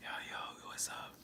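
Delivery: very quiet, slow, breathy, hushed whisper. Teasing a caller who sounds quiet, imitating someone whispering. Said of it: "you sound like you whispering".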